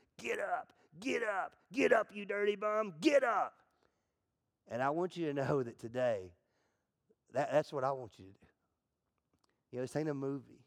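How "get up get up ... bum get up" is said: high, drawn-out mock scream. Speaking to an audience about Rocky, imitating Mick screaming from the corner. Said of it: "he's screaming".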